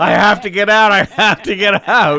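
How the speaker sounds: shrill, very high, full-volume repeated yell. Retelling getting carsick in the back seat: imitating own yelling. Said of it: "I'm yelling".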